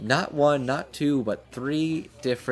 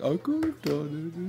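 mock whimpering and pouting, higher and quieter; 4 semitones higher, 5 dB quieter than usual. Retelling a scene, the speaker acts out her reply: mock whimpering and pouting. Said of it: "she's just kind of whimpering and pouting".

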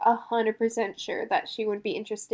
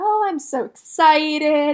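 very loud, very slow, drawn-out fake excitement; 6 semitones higher, 8 dB louder than usual. Retelling what a girl said while sitting with her friends: mock-excited. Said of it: "acting like".

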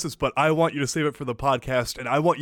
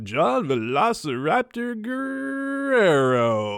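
hammy radio announcer, swooping, pitched up, last word stretched; 7 semitones higher than usual. Speaker shows how to announce a name, in a cheesy radio guy voice. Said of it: "the cheesy radio guy voice".

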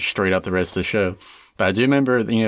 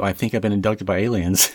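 imitated whispering voice. Retelling a friend at a sleepover confiding something: imitating Cade whispering. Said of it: "kinda looked at me and kinda whispered".

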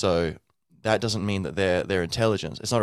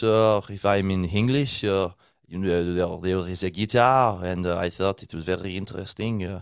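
put-on French accent, slower. Explaining language learning, the speaker demonstrates talking in english with a french accent. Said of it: "I put on the French accent".

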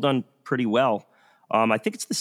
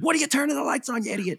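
mock, shrill, very high screaming; 14 semitones higher than usual. Retelling how you yelled at a character on TV, reenacting the scream. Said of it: "I'm screaming at the TV".

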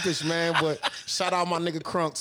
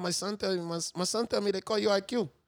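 put-on Salvadoran accent, higher pitch; 4 semitones higher, 3 dB quieter than usual. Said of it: "my son Salvadorian ain't great".

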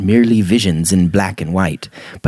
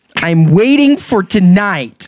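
very high, shrill, snapped-back yell; 11 semitones higher, 3 dB louder than usual. Frustrated with the nagging voice in her head, Jenny snaps back, yelling. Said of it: "simply snapped back and yelled".

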